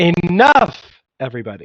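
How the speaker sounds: loud voice with swooping pitch. Amid general chaos at the table, calling everybody to sit, in a raised voice. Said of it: "And I just raised my voice".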